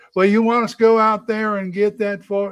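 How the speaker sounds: put-on Southern Georgia accent. Retelling answering a georgia mother after catching her accent: retelling own southern georgia accent. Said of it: "she started talking like this".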